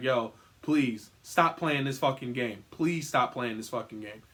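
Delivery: put-on frightened, scared pleading like a young kid. Retelling begging as a scared kid to stop the game: retelling a scared plea. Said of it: "I'm fucking young as shit and scared as shit".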